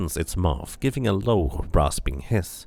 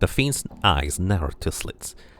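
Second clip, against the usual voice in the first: normal talking voice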